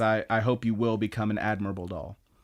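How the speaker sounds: plain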